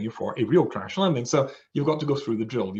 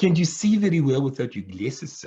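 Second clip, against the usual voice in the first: put-on female South African accent; 2 semitones lower than usual. On a call, repeating a woman's question to him in her South African accent. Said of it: "she said in her South African accent".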